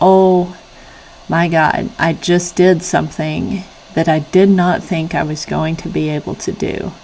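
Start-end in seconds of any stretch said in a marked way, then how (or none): none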